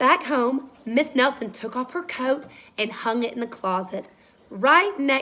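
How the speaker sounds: ordinary delivery, nothing marked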